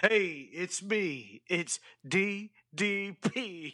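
very slow, stretched-out, wrestler-style intro voice. Imitating the yelled entrance catchphrase: yelling DDP's intro. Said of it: "and yelled".

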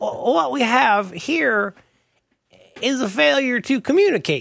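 very high pitch, very slow, dragged-out delivery. Showing how Strother Martin talked, after comparing impressions: Strother Martin impression. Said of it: "Strother Martin was a little more like this".

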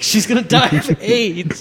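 high, loud, giddy laughing, gleeful talk.

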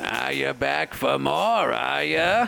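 put-on slow, high, creaky old-man voice. Narrating to a listener, the speaker voices their rival greeting them: Sabin Nicholmas old-man voice. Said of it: "He's like an old man. He's like 85 years old".

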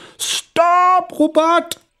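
very high, shrill, very loud all-out yell. Reading a story where the father shouts at the phone app: shouting very loudly. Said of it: "han råber nu meget højt".

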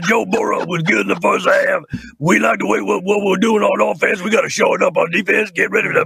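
gravelly, creaking put-on voice. Doing a voice for a restaurant from the bayou, in Ed Orgeron voice. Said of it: "I did Ed Orgeron. So we sound like this".

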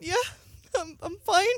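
play-acted tearful, choked-up voice. Retelling answering classmates after a band member left: imitating choking up. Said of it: "choking up".

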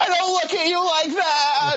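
very high, loud yell with long, drawn-out that. Retelling a cartoon scene where a neighbour yells across the street: imitating someone yelling across the street. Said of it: "he yells across the street".

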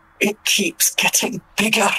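grumbled quietly under the breath. A player's character, speaking Dwarvish, muttering under her breath. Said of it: "she just says under her breath".

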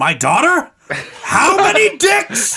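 put-on furious, enraged old man outburst, very high pitch. Speaker imagines an old man on a leather couch watching ticker tape; enraged old man.

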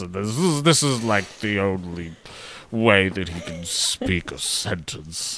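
slow posh voice, set at back of throat. Imitating how an actor playing a dad talks: posh voice at the back of the throat. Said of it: "kind of talks like this".

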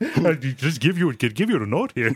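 put-on, high-pitched foreign man voice. Retelling a surgeon's line from a cartoon: Brendan Small foreign man voice. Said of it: "It's literally just his foreign man voice".

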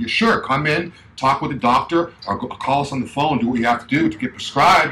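ordinary talk, nothing marked

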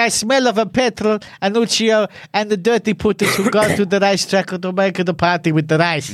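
ordinary talk, nothing marked

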